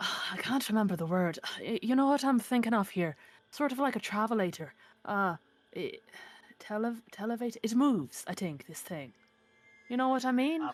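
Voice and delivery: stumbling, halting, word-searching musing delivery. Voicing a character staring down at the ruins: quietly muttering. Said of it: "kind of quietly say".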